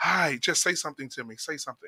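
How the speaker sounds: eager, keen, pressing tone. Imitating women following a visitor around after he gets off the plane: imitating women following him around. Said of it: "those fucking women will follow you around".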